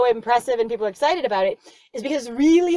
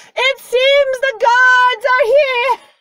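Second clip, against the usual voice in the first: very high, carrying, drawn-out yell; 13 semitones higher, 8 dB louder than usual. Acting out a character yelling down from a balcony: imitating Nadia yelling down. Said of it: "yelling three or, or four stories down".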